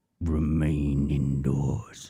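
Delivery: very low, deep, menacing, sinister villain voice. Trying out a Halloween announcement with a bass effect, sinister evil voice. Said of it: "make it sound even more evil".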